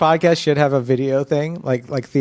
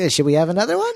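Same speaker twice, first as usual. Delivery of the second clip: put-on elderly voice and speaking manner; 4 semitones higher than usual.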